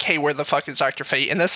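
ordinary delivery

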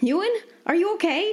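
desperate, frantic call, pitched way up high. Calling down to a companion who fell through the floorboards, shouted frantically. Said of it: "She shouted frantically".

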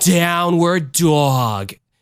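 high female announcer, dog stretched. Retelling what a lady on the computer would say, in a Linda Richman voice. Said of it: "she said it like Linda Richman from Coffee Talk".

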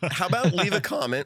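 voice cracking into a very high squeak. Closing a video after a side topic, voice cracking. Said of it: "Now my voice is cracking".

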